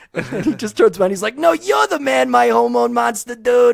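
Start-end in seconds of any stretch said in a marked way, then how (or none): 1.3-3.7 high, loud, creaky, raspy character voice. Retelling Coach Steve answering his hormone monster: Coach Steve impression. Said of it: "usually the one I make fun of is Coach Steve".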